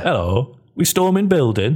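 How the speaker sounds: Derbyshire-Yorkshire way of speaking. Playing a masked vigilante again, in a Derbyshire-Yorkshire accent. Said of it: "I think it's Derbyshire, Yorkshire".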